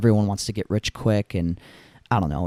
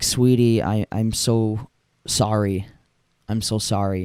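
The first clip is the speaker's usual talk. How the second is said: put-on tearful crying voice. Retelling a father apologizing to his young daughter: imitating someone crying. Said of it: "he's, like, kinda crying".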